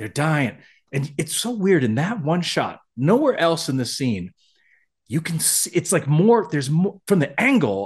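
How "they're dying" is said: put-on whispered delivery. Retelling a scene where a character warns the doctor: imitating a whisper. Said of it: "Paris is now whispering to the doctor".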